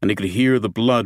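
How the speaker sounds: usual speaking voice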